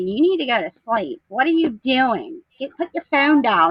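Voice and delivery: mock, bossy, yelling telling-off. Retelling her husband yelling at her late at night, imitating her husband yelling. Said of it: "my husband yelling at me".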